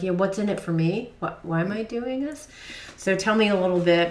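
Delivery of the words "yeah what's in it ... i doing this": normal talking voice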